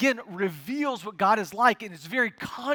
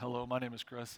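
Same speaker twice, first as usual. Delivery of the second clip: very low, soft, hushed, super manly deep voice; 9 semitones lower, 12 dB quieter than usual. Retelling how an office coworker introduced himself, imitating Chris's deep voice. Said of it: "I need that deep voice".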